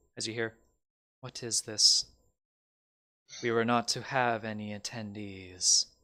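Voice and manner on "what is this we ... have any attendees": icy, severe, stern, cold tone. Narrator voices the bride objecting to wedding attendees: stern, cold bride's voice. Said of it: "it's stern and cold, coming from the bride".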